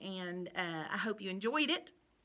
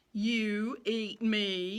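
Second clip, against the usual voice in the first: scornful, jeering sneer in a horse voice. Reading a horse's line to another animal in a story; sneering. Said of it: "sneered the horse".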